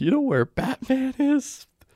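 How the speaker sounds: put-on very high-pitched baby voice. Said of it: "that's a good Baby Jonker".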